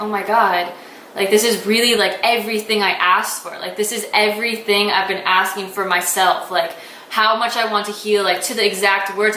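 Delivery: ordinary talk, nothing marked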